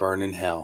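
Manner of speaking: soft half-whisper under the breath. Acting out what to say over a friend's casket: half-whisper. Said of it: "I'm gonna whisper".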